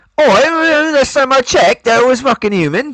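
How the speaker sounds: failed, bad Australian accent, very high pitch. Retelling a film scene, quoting a character: attempted australian accent. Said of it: "That's not an Australian accent, but that's what we're going with".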